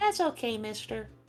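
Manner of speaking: put-on little kid voice. Voicing a kenku mimicking a little kid: little kid voice. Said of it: "a little kid like".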